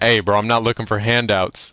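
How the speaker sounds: ordinary delivery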